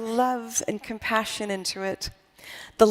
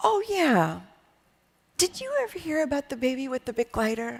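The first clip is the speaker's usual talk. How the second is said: soft, gentle delivery. Retelling an old friend's answer on the phone, in C J's gentle voice. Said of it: "in his gentle voice".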